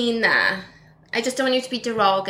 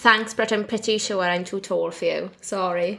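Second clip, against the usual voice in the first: plain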